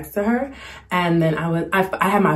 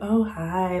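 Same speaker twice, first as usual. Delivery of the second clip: put-on flirty tone, quieter; 5 dB quieter than usual. Retelling how a guy outside greeted them: imitating a flirty greeting. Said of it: "trying to be flirty".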